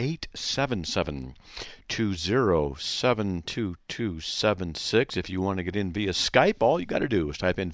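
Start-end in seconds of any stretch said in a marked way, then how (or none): 0.0-5.2 spoken more slowly and much quieter. Show host repeats the call-in phone number for listeners, more slowly. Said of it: "I'll say it again more slowly".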